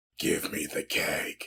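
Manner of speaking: deep, breathy, whispered voice. Retelling how a guy demanded the keg from the liquor guy, deep voice. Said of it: "with full fire engine red eyes and a deep ass voice just goes".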